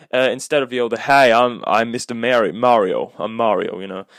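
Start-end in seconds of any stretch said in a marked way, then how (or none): 0.9-3.8 slow, drawn-out, clumsy, botched American accent. Complaining about the voices in the Mario movie, doing a bad American Mario voice. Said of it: "I can't do a good American accent".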